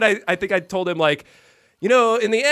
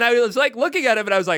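usual speaking voice

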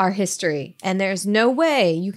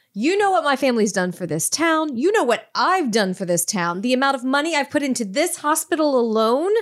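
acted demanding, insistent tone, pitched up; 5 semitones higher than usual. Playing a matriarch demanding hospital access, demanding tone. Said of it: "I'll be like".

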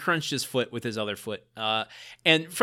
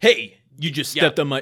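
put-on tough Jersey bully accent, louder; 4 dB louder than usual. Retelling the bully's line after Randy steps on his shoes, tough Jersey bully accent. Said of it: "Why do all bullies sound like they're from Jersey?".

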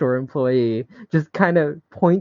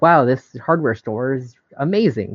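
ordinary talk

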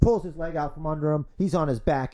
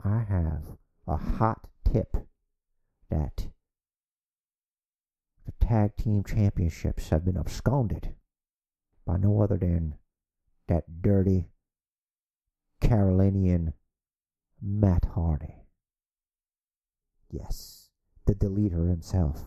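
hushed whisper, much lower pitch; 9 semitones lower than usual. Speaking on location to Corey, passing on a hot tip, whispering. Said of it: "why are you whispering?".

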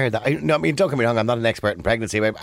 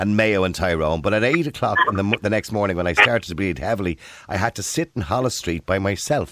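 ordinary talk

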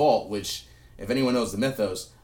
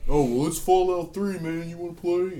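high, put-on mocking voice; 9 semitones higher than usual. Retelling Gabe's reply in a story, in a mocking Gabe voice. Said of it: "that's my voice for when I'm gonna mock somebody".

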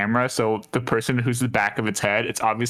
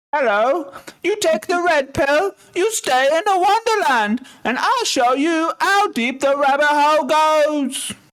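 very high-pitched put-on English accent; 6 dB louder than usual. Performing a Matrix line in a scene when asked: Englishman impression. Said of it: "your, um, Englishman impression is so specific".

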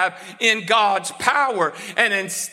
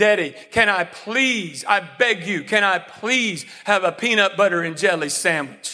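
put-on, pleading, begging child voice. Acting out a child begging a parent for a sandwich: imitating Molly begging. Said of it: "Molly coming and begging me".

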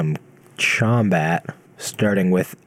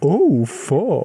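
ghost voice, put-on German accent, pitched up; 8 semitones higher than usual. Mimicking the ghost voice just heard, after saying he's German: ghost voice with German accent. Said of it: "He's German".

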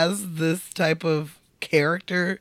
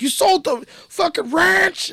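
put-on very high, loud, raging, furious shout; 12 semitones higher, 5 dB louder than usual. Retelling a film scene where brothers fight: imitating an angry yell. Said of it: "fucking pissed, and he yells at him".

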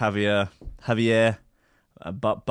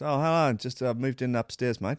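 put-on wonky, faded, softened South African English accent; 2 semitones higher, 3 dB quieter than usual. Imitating the new upstairs neighbour introducing himself: imitating neighbour's softened South African accent. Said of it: "There's a South African vibe to him".

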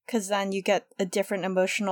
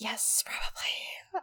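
whispered, hushed, put-on snake voice; 11 dB quieter than usual. Voicing the snake in a His Dark Materials scene, snake voice. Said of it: "That's my voice for Snake".

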